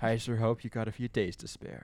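mock deep, mournful voice heavy with sorrow. Retelling a man's words to her, imitating a sorrowful voice. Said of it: "the sorrow in his voice".

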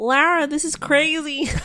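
slow, high-pitched put-on American accent. Quoting a man's film line in an impression: imitating his American accent. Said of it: "that's my impression of his".

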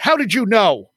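acted-out abrupt outburst, mild shouted yell. A man comes into the studio and yells at the speaker; retelling a yell. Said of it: "he just yells at me".

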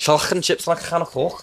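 high, slow, bad Scouse accent impression.

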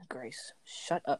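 sharp, harsh, aggressive whispered snap. Telling another speaker to stop interrupting: aggressive tone. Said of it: "Why are you so aggressive?".

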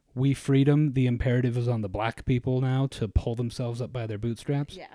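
normal talking voice

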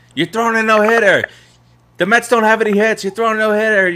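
put-on piercing, shrill scream, pitched very high. Retelling a game where Keith yelled at the pitcher; imitating Keith screaming. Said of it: "he starts screaming".

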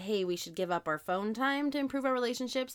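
ordinary talk, nothing marked

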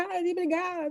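very high-pitched yell, crying out. Retelling how the daughter yells during debates: imitating a daughter shouting. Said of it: "ela começa a gritar assim".

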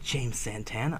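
quiet, low murmured words. Podcast host introduces his co-host by name, said softly. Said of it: "why'd you say it so softly".

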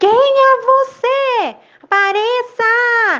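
loud calling out, very high, very slow, drawn-out. A frightened boy takes a deep breath and calls to an unseen voice, shouting loudly. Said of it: "bem alto gritou".

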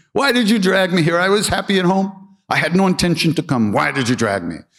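mock, very high-pitched, loud hollering. Telling a story of a devotee arriving at the temple, acting out his yelling. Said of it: "he starts yelling at Maharaji".

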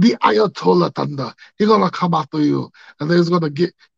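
loud, booming, wrestler-style Russian accent. Streamer plugging another streamer, warning viewers: sounding like Nikita Koloff. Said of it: "now I'm starting to sound like".

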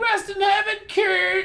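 acted, very high, very slow, drawn-out yell. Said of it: "the same skit that he yells out".

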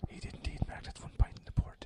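very soft, breathy, barely voiced hushed whisper. During a quiz round of questions and answers, whispering. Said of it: "Why is he whispering?".

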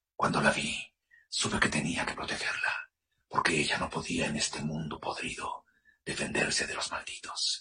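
breathy whisper, right up on the mic. Showing how a character sounds when speaking right up on the mic: speaking right up on the mic. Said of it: "Y entonces está hablando así".

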